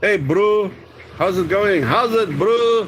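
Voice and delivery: thick, strong South African accent. Teaching viewers a south african greeting, in a south african accent. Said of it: "Very South African".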